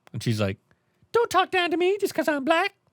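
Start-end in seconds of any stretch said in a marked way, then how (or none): 1.1-2.7 very high, strong, put-on Southern accent. A mermaid character answers other characters in a told story, mermaid voice that came off Southern. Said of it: "I was trying to do a mermaid voice, and it came off as a very racist Southern voice".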